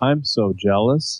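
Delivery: fake enthusiasm, mock excitement. Answering the others' joke with put-on fake enthusiasm. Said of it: "the most, uh, fake, uh, enthusiasm I can muster".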